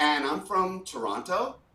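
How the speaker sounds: Toronto said with rising uptalk. Acting out someone introducing herself, every phrase a question: rising like a question on toronto. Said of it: "every single phrase sounded like a question".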